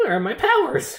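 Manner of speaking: panicked villain voice losing control.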